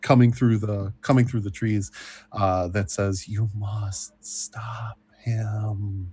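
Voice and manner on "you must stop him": very slow, wispy, ghostly spirit voice. Narrating a game, voicing a voice coming through the trees: ghostly, wispy voice. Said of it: "ghostly, wispy voice".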